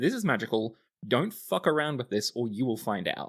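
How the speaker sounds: ordinary talk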